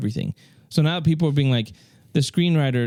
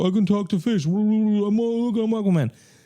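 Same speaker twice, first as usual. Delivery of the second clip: put-on tipsy, drunken voice, pitched up; 8 semitones higher than usual. Retelling a scene where he stumbles into a puddle: imitating drunk Aquaman. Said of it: "and he's drunk".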